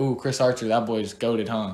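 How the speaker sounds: wry, kinda sarcastic, half-joking tone. Retelling own past remark while watching baseball: imitating own sarcastic remark. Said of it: "Kinda sarcastically".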